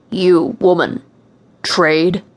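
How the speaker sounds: deep, low, growling monster voice. Narrator reading the first words a monster speaks to the narrator, deep voice. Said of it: "a deep voice said".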